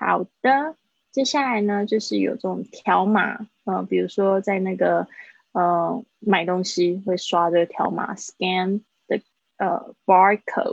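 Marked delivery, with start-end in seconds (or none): 10.0-10.7 "barcode" stressed, spoken slow and loud. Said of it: "不是Q R code".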